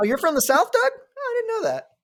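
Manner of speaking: high, sarcastic mock surprise.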